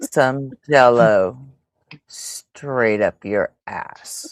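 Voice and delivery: deliberate, unhurried, slow, drawn-out reading. Saying a phrase again after being asked to say it slower: said slowly. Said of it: "say it slower".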